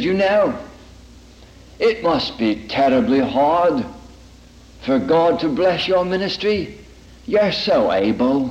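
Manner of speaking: put-on English accent, clipped delivery. Speaker retelling a man's fatherly counsel to a woman, in a clipped English accent. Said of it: "in his clipped English accent".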